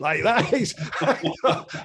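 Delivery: words laughed out, high-pitched.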